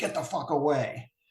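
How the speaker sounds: put-on angry old man voice. Retelling a dream where someone in the neck speaks: angry old man voice. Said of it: "an angry old man who lives in my neck says".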